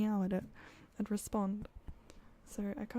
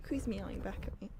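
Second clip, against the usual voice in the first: ordinary talk, nothing marked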